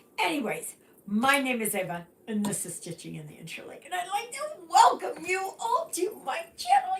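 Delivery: hoarse, slightly high voice. Welcoming viewers to the channel, voice affected by laryngitis. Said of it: "Sorry about my voice today".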